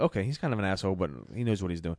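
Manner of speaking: ordinary talk, nothing marked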